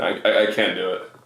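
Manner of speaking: ordinary talk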